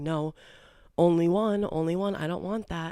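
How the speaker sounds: slow, patronizing, condescending talking-down tone. Retelling how a date talked down in front of a waitress: imitating someone talking down. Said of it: "talking down to me in front of this waitress".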